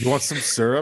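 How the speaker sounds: rough, loud put-on Canadian accent. Riffing on friendly canadian aliens with a friend, in a rough canadian accent. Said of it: "your your Canadian accent is rough".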